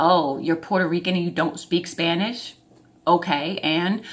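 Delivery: snide, rude, sarcastic tone. Retelling what a girl on a double date said: imitating a rude, sarcastic girl. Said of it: "really rude and sarcastic at the same time".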